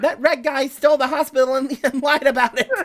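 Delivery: tiny, high, little creature voice. Narrator reading a character's line in a story, in a tiny voice. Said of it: "The tiny voice says".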